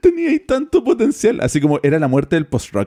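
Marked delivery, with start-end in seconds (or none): 0.0-1.4 mock very high, tearful crying wail. Retelling a meme where a reviewer buries an album, imitating Anthony Fantano crying. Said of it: "el loco se pone a llorar y dice".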